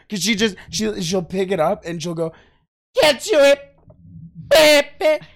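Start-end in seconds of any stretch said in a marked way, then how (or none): 3.0-5.1 put-on yell, higher, louder, slower. Complaining about her habit, the speaker mimics what she says: imitating a loud yell. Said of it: "That was loud".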